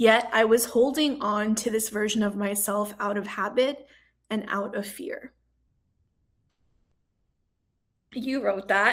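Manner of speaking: tearful voice, holding back tears. Speaker reads back words the listener wrote, holding back tears. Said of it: "I'm gonna try to say this without crying".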